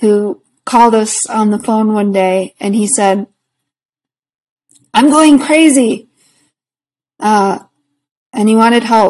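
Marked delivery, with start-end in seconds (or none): 4.9-6.1 put-on really heavy Boston accent, pitched up. Retelling a phone call from an elderly caller, in a strong boston accent. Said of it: "with a really strong Boston accent".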